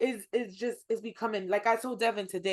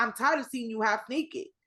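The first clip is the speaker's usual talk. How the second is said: usual speaking voice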